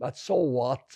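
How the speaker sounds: pointedly sarcastic, ironic, throwaway delivery. Speaking of deaths in hungarian pogroms, dismissing them: ironic. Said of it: "I'm being ironic now".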